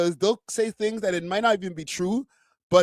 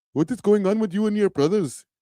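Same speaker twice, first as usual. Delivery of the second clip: put-on Indian accent, played for comedy. Testing whether talking this way gets demonetized on YouTube, Indian accent. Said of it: "I'm doing the Indian accent".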